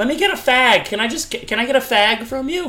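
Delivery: put-on loud New York accent, pitched very high. Speaker quoting what their mom says, in a new york accent. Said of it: "I'm going to do my mom's, you know, New York accent now".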